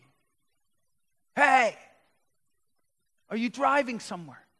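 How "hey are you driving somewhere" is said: put-on woman's high, loud, drunken shouting voice. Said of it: "starts shouting at me".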